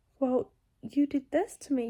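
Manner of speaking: ordinary talk, nothing marked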